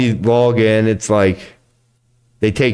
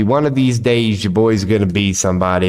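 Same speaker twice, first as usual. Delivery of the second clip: normal talking voice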